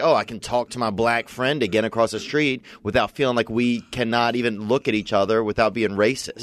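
usual speaking voice

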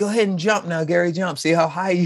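acted, shrill, high-pitched goading screaming. Telling a childhood memory, quoting his brother urging him to jump, retelling Jeff's screaming. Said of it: "who's always screaming".

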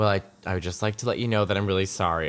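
very quiet, soft, hushed, barely voiced. Retelling what a woman said after a show: imitating someone speaking quietly. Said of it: "really quietly".

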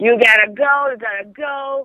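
mock frantic, drawn-out, urgent but contained scream. Retelling being woken by someone screaming at them: imitating someone screaming. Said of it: "him screaming at me".

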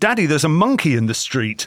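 plain

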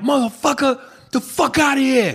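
very high-pitched, sharp shout, acted out. Recounting yelling at a man in a car at age seven: retelling a yell. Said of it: "And I yelled".

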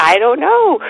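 high, loud, stunned, blurted out.

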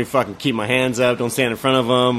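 ordinary talk, nothing marked

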